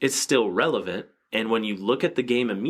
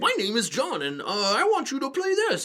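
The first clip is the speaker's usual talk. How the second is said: very high, swooping clown voice. Introducing himself as john and asking the other speaker to play a game, bank-robbery clown voice. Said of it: "Like a freaking bank robbery clown".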